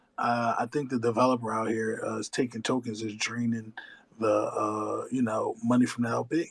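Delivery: quiet whispered voice. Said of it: "if I would've whispered to anybody and said".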